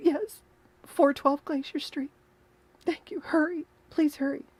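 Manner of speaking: put-on crying voice. Acting out a nine one one call after a viewer's remark: mock cry voice as Penny. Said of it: "You forgot to use your cry voice".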